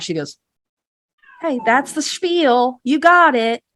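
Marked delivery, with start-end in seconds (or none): 1.4-3.6 slow, fake-cheery tone with forced smile. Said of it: "fake smile".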